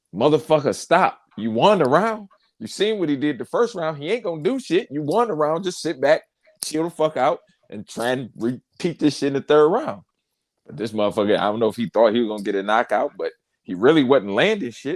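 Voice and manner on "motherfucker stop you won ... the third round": high, screaming, pleading voice. Retelling yelling at a fighter on TV between rounds, retelling screaming at the TV. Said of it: "I'm screaming at the TV like".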